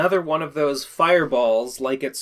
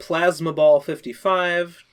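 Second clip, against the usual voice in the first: normal talking voice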